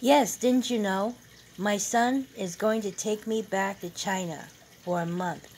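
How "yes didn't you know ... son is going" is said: usual speaking voice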